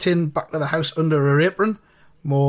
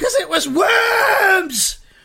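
horrible gleeful crow, very high and very slow; 4 dB louder than usual. A woman answers a man wiping sauce from his beard, crying out with horrible laughter. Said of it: "cried Mrs. Twitch ... rocking with horrible laughter".

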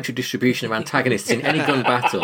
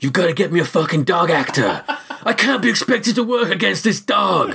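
pitched-up, grumbling film star manner; 6 semitones higher than usual. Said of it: "Bale going".

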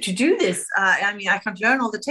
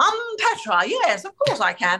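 put-on snobby English voice, higher; 7 semitones higher than usual. Retelling own words at age eight: imitating a snobby English accent. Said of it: "I tried to sound like a snobby English person".

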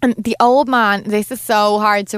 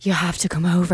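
put-on woman's voice, lower and quieter; 4 semitones lower, 5 dB quieter than usual. Retelling a TV scene where a character phones: imitating Jackie's voice. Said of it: "in her voice".

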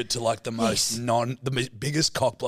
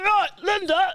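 throaty voice, much higher and louder; 5 dB louder than usual. Trying the line again after being coached on the voice, speaking from the back of the throat. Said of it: "You got to speak from the back of the throat".

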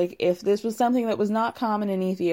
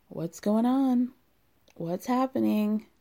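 tender, very gentle voice. Retelling Biniam asking her in the van what's wrong: imitating Biniam asking gently. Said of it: "very gently asks her".

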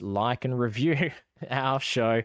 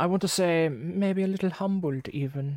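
hammy, campy movie-villain voice, pitched up; 7 semitones higher than usual. Describing how people responded to their recordings, in a Dr. Evil voice. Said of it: "Okay, Dr. Evil".

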